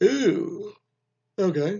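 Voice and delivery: words stretched through yawn. Quoting a woman's reply to being hit on, yawning through it. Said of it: "I had a yawn when I said "ew."".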